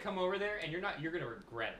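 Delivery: half-joking, jokey, playful, not sincere. Rehearsing telling the guys to be quiet, in a jokey tone. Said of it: "That sounded jokey to me".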